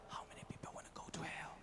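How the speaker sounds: hushed near-whisper, very quiet, barely voiced. Retelling a pastor's sermon question about heaven and hell: very quiet voice. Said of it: "with a very quiet voice".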